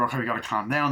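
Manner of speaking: ordinary delivery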